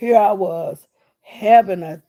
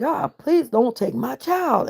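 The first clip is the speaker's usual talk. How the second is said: restrained, pleading cry, hollering held in; 4 semitones higher than usual. Retelling what they hollered as they were put in an ambulance, retelling own hollering. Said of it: "I was just hollering".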